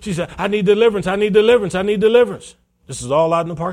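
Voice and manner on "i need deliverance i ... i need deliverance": high, loud, frantic, desperate pleading. Retelling a woman in the parking lot before service, imitating a frantic woman. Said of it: "she's all frantic".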